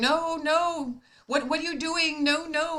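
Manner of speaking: put-on agitated, high, drawn-out, worked-up elderly woman voice. Retelling an elderly lady refusing a stranger paying: imitating a worked-up elderly lady. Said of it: "she's getting all, you know, worked up".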